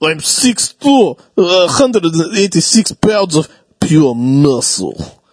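put-on Russian accent. Imitating a Russian recruitment video: Russian accent. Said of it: "I love that accent".

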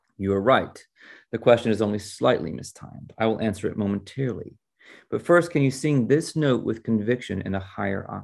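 plain

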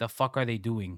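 acted speaking up loudly. Retelling watching a fight scene in a theater, retelling raising his voice. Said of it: "I raised my voice going".

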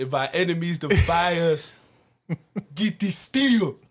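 put-on Nigerian accent. Quoting a line in character for a co-host, Nigerian-accented Apollo voice. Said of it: "Nigerian Apollo".

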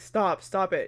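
ordinary talk

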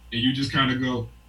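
ordinary talk

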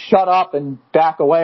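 ordinary delivery

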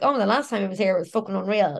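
ordinary talk, nothing marked

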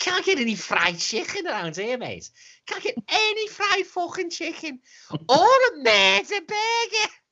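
very high, put-on, fake Scouse accent. Telling how he and his lads joked on holiday in Portugal: false Scouse accent. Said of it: "we do this false Scouse accent".

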